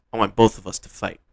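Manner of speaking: plain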